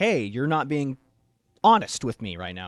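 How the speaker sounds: put-on stern fatherly dad voice. Retelling how a man answers kids spitting venom at him: mock stern dad voice. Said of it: "gives him that stern dad voice talking to".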